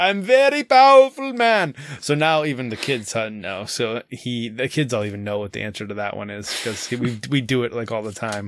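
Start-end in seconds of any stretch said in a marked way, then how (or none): 0.0-1.7 fake Russian accent, much higher, louder, slower. Retell how he acted out the game clue, as a Vladimir Putin impression, fake Russian accent. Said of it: "That's our Russian accent".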